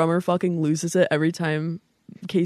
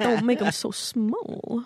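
put-on quirky voice, higher; 5 semitones higher, 3 dB quieter than usual. Quoting a comedian's line to a friend: Christopher Walken impression. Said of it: "in my Christopher Walken impression".

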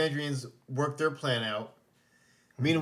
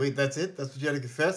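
ordinary talk, nothing marked

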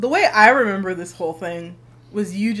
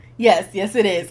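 plain

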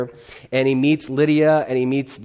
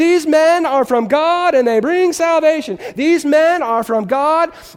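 put-on girl's scream, higher and louder; 5 dB louder than usual. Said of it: "scream at the top of her lungs".

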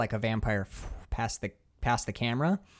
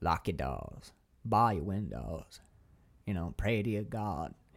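low, hushed, eerie, cryptic-sounding voice; 5 semitones lower, 5 dB quieter than usual. Describing a film scene to another speaker, quoting Foster's monologue: cryptic weird Foster voice. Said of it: "monologuing in that like cryptic weird voice".

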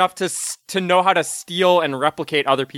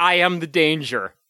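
ordinary talk

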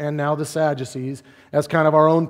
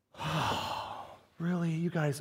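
mock hushed, very soft, deep sorrowful sigh; 14 dB quieter than usual. Retelling how he answered the Pharisees and Sadducees, acting out a deep sigh. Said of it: "he sighed deeply in his spirit".

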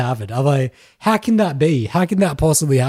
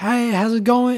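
big, loud, high, very feminine voice; 9 semitones higher than usual. Retelling how a woman of about fifty greeted the speaker, imitating a loud feminine greeting. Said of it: "Like really loud".

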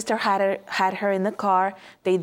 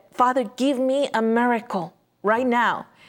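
desperate, begging, pleading tone; 4 semitones higher than usual. Retelling a mother's prayer to get her baby out: imitating a desperate plea. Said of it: "she was so desperate".

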